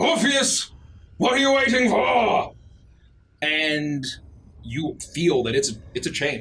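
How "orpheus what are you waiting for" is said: booming voice, lower. The narrator voices a voice calling out to Orpheus, booming voice. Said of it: "you hear the voice boom out".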